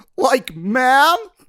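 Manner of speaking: very high, loud cartoon voice. Asked by the hosts for an impression: Shaggy impression. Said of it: "can you give us a Shaggy impression".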